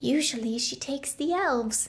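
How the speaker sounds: confiding, conspiratorial voice. Narrator reads a goblin answering a questioner about a woman, conspiratorial. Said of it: "Hiccup said conspiratorially".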